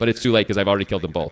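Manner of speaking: plain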